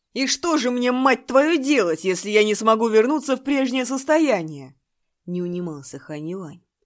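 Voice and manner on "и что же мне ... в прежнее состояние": yelling, very loud, high, nonstop shout. In a story, a junior disciple keeps shouting at his elder: shouting. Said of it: "Но его Шиди продолжал кричать".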